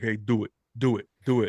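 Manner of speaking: put-on New York Italian accent. Describing a movie scene, quoting an actor's line in Ben Stiller's New York Italian voice. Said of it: "New York Italian or something".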